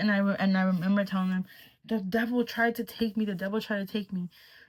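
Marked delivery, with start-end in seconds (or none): 1.9-4.3 put-on frantic, panicked pleading, higher pitch. Retelling telling the brothers something right after waking: retelling a panicked plea. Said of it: "I was pleading for help".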